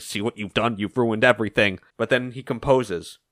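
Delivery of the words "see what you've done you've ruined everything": low, hushed, muttered stage half-whisper. Retelling a comic scene where a villain talks to himself: imitating a half-whisper.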